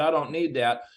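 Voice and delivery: ordinary talk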